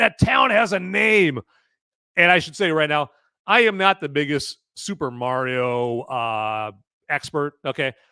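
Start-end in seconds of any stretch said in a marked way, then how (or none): 0.0-1.4 high, loud, forceful yelling. Imagining a viewer's correction about the town: imitating someone yelling. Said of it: "someone's gonna yell at me like".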